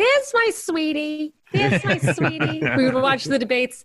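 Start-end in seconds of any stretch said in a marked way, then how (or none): 0.0-1.3 imitated voice, much higher pitch. Speaker recalling what their mother used to call Ron Paul, imitating their mother. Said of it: "My mother used to call him".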